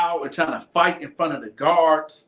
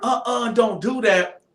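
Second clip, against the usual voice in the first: put-on older woman's voice; 6 semitones higher than usual. Retelling being grabbed mid-fight, voice like an older female guard. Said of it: "I thought it was a female guard, like an older female guard, because of the voice".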